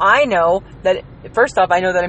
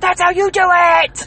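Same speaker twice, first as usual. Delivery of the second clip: put-on shrill, very high, piercing little kid shout; 11 semitones higher, 3 dB louder than usual. Describing kids at a wrestling match, imitating one little guy, piercing kid's voice. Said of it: "his voice was so piercing".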